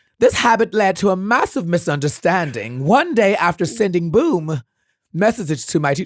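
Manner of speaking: loud, put-on British detective narration accent. Narrator reads a personal story aloud in a British detective accent. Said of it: "with a British detective accent".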